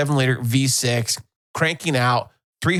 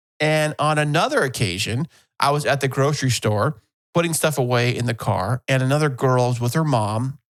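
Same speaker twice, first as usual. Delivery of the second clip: normal talking voice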